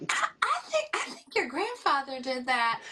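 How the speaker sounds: put-on nice, sweet, high-pitched Southern accent. Speaker quotes a woman talking about the speaker's grandfather; imitating sweet Southern accent. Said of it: "She had a nice, sweet Southern accent".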